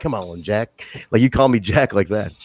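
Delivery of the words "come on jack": seventies action-movie cool-guy jive talk. Retelling the other speaker's line like cool seventies action dudes: imitating cool seventies action dudes. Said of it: "you said it like those cool, like, you know, those cool, like, action dudes from, like, the seventies".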